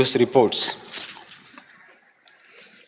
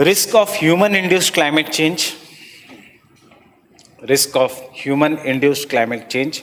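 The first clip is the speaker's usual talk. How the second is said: slow delivery, each phrase drawn out. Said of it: "ये तीन point wise लिखना".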